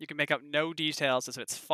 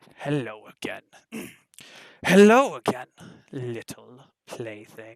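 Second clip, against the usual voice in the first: booming, very loud, deep, hungry growling voice; 2 semitones lower, 8 dB louder than usual. Narrating a voice that echoes through a room of puppets, deep hungry growl. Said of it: "A deep voice echoes out... The voice growls hungry".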